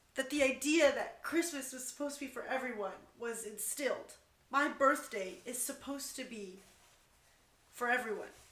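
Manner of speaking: talking through tears, tearful crying speech. Speaker talks about being a Christmas baby and their birthday, crying. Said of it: "I didn't mean to cry".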